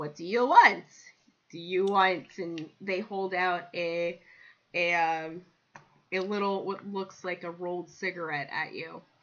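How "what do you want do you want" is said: loud, big put-on cat-creature voice. Voicing a tabaxi character offering a gift: Khajiit voice. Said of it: "I gotta get my Khajiit voice".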